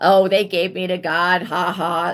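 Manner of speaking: slow, carefree, chuckling, laughing dismissive tone. Imitating a person who laughs about being given to god: imitating someone laughing it off. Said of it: "laughing, like".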